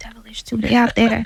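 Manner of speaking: hushed, whispered aside. Speaker from Jamaica confiding to the ladies listening: whispering. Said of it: "I'm gonna whisper with you".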